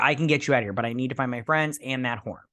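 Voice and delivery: ordinary talk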